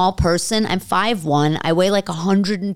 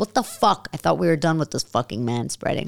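even voice, not raised; 4 semitones lower, 4 dB quieter than usual. Retelling what they said to a rude man taking up room, retold without raising voice. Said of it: "But I didn't raise my voice".

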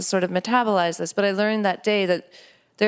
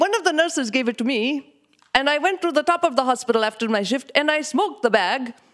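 put-on Indian accent, raised pitch; 5 semitones higher than usual. Retelling what dad said about trying marijuana, imitating dad's Indian accent. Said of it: "I could only ever talk about my dad with his accent".

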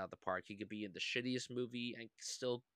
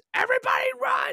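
shrill, very high-pitched, very loud all-out scream; 18 dB louder than usual. Retelling a movie scene where a dam explodes, retelling a full-lung scream. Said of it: "and then he just screams".

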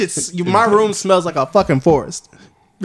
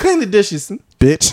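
put-on swearing, cussing mom voice; 4 semitones higher than usual. Imagining the speaker's sweet mom swearing, imitating mom cussing. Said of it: "I just imagine my mom cussing sometimes".

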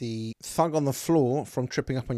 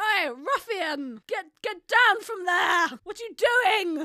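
very high-pitched, loud scolding shout. Game master voicing Delvey as a player climbs onto the barrels, Delvey shouting. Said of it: "Delvey shouts out".

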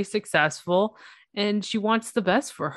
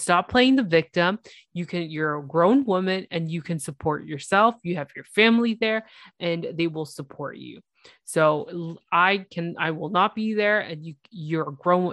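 ordinary talk

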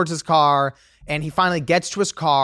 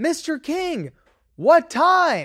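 put-on very high, slow, swooping, drawn-out shout; 11 semitones higher than usual. Telling of a man who slammed the door on them, retelling their own yell. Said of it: "So I'm like now yelling".

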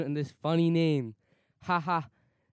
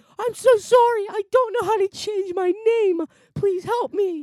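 cracking, squeaky yell, very high and loud; 7 dB louder than usual. Retelling what she yelled when stuck in a Zoom meeting, re-enacting a cracking yell. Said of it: "You turned into Mickey Mouse".

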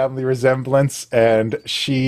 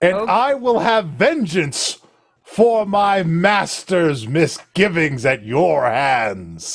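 stern cleric character voice, higher; 4 semitones higher than usual. Voicing a stern high cleric greeting the players: stern high cleric character. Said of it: "She says".

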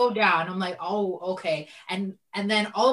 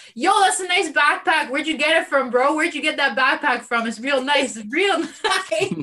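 loud yelling, raised pitch; 7 semitones higher, 6 dB louder than usual. Retelling yelling out of the store at him wearing the stolen backpack, retelling own yell. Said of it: "I'm yelling out of the store".

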